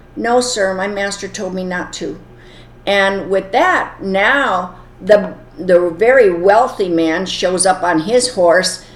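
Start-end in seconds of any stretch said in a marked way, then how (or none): none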